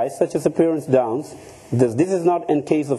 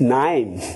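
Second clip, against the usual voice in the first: "naim" pronounced with an Australian vowel. Pronouncing a person's name in an Australian way: Australian pronunciation of Naim. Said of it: "I just happened to pronounce the name in an Australian way".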